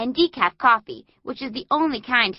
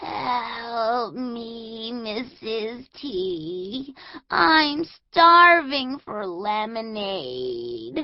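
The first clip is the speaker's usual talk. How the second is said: put-on weak, feeble voice, much slower. Recalling own words to Missus T, in a put-on weakest voice. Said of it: "in my completely weakest voice".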